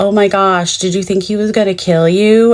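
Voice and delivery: mock-sarcastic, put-on sarcastic tone. Retelling what people kept asking the speaker, imitating a sarcastic tone. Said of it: "done in a very sarcastic, tone".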